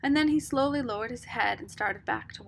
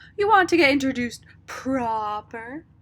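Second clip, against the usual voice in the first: very loud, jeering, mocking tone; 3 semitones higher, 9 dB louder than usual. Beauchamp answers a blushing Rob in a mocking voice. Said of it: "Said Beauchamp in a mocking voice".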